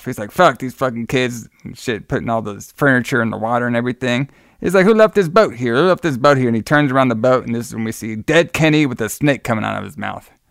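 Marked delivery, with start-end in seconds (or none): none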